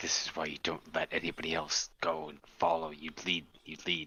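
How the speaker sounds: muttering under the breath. A tabletop player voices his character after an ally's call, muttering to himself. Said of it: "Hakon mutters to himself".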